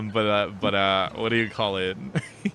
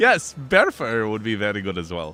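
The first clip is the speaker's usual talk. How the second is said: booming, very loud, slow, deliberate in-character voice; 4 dB louder than usual. Voicing a character who answers a whisper: very loud reply in character. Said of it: "She just responds very loudly".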